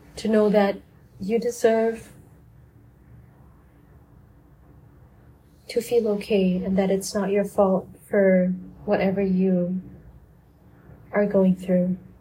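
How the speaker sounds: sad-sounding tone. Encouraging listeners to give themselves grace before signing off, sounding sad. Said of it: "And I sound really sad".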